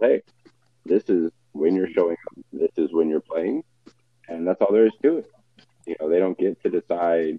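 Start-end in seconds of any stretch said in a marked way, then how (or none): none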